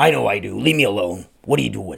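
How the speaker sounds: rasping, rough, creaky put-on dad voice. Imitating father answering people who say they sound alike: imitating father's voice. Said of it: "That's my impression of my father".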